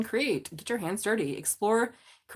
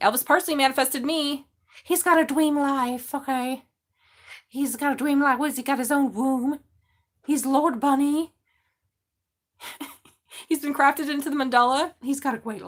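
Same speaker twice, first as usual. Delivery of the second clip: put-on, high, loud bunny character voice; 6 semitones higher, 6 dB louder than usual. Speaker talking to viewers about a bunny; bunny voice. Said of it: "that's my bunny voice".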